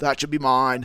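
attempted Westchester accent. Acting out a prisoner watching Creed win fights: put-on Westchester accent. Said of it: "Westchester accent".

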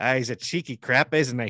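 loud, drawn-out put-on Australian accent. Joining in mocking how Australians talk: put-on Australian accent. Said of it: "when I follow his accent".

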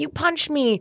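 very high-pitched yelling. Retelling the security guard's words: imitating someone yelling. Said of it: "still yelling at me".

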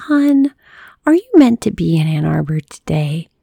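gentle, calming, low preschool-teacher voice. Mom speaks up as the narrator bursts into nervous tears: soothing preschool teacher voice. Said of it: "My mom's soothing preschool teacher voice".

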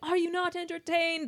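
very high, declaimed in movie-line style. Retelling a film scene, holding up a hand to the crowd: imitating Maximus. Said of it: "He's like".

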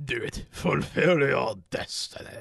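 very slow, with every word drawn out. Doing a Palpatine impression during banter: Palpatine impression. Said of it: "a Palpatine impression".

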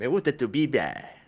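put-on, slow, cutesy, spoiled, pampered sweet-talk. Imitating how someone says a line, mock pampered, spoiled tone. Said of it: "de hecho lo dice como medio chiqueado. Como que habla así como que".

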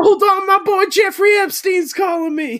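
put-on very high, loud, wild yelling.

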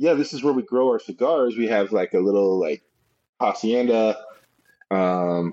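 ordinary delivery

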